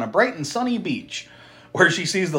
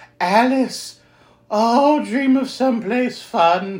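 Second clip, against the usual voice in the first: slow, deliberate put-on woman's voice; 7 semitones higher than usual. Acting out a movie character's line during a recap: Doctor Loomis trying to sound like a woman. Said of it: "You sounded like Doctor Loomis trying to sound like a woman".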